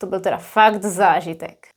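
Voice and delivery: ironic, bone-dry, sarcastic delivery. Showing how the phrase turns negative in another context: sarcastic tone. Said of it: "with a different tone, it could also be something negative, sarcastic".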